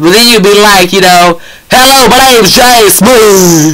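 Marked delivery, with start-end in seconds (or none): 1.7-3.8 loud, slow, smooth shout in a normal talking manner.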